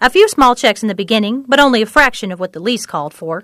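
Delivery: ordinary delivery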